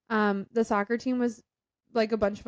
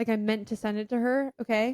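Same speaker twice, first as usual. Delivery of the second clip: usual speaking voice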